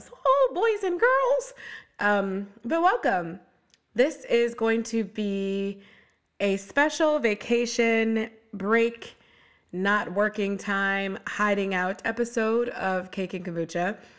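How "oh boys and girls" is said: very high, cartoon-mouse-like voice. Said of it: "that's turned into kind of a Mickey Mouse".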